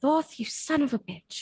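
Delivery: quiet grumbling mutter under breath. Voicing a character who speaks under the breath: muttered under breath. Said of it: "under my breath, I just say".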